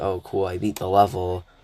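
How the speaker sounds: mock flat, unexcited monotone delivery. Describing the reaction they won't have after beating a level: mock flat monotone. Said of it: "I'm not fucking monotone".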